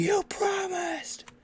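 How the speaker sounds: very high, slow screaming rage at full volume.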